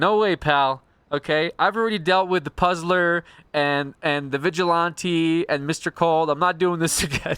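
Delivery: fed-up, losing patience. Retelling how Galaga dealt with the Joker: imitating Galaga losing it. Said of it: "losing it again".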